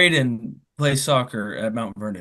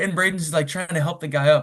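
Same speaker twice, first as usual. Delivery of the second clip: ordinary delivery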